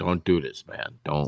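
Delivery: put-on dumb-sounding, stern voice. Talking about a show where fights break out, Todd Gordon's stern voice. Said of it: "he always has that dumb, stern voice".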